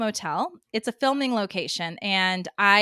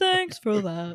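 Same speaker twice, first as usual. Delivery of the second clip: put-on voice, spoken mid yawn. Imitating a man on a show who always sounds mid yawn. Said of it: "he's always, like, mid yawn".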